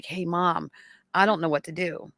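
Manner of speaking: tearful, crying voice, speaking through tears. Retelling a son's phone call: imitating son crying. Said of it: "he called me up and he was crying".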